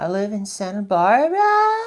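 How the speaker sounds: rising, question-like intonation ending on "Santa Barbara". Acting out someone introducing themselves: rising question-like ending. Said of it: "It sounds like a question".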